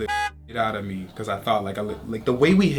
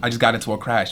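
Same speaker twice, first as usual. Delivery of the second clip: ordinary delivery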